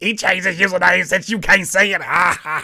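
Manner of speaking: loud, excited, gleeful delivery, acted out. Mimicking how Ashley gleefully delivered the username news, mock-gleeful Ashley imitation. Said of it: "It's all that glee in your voice".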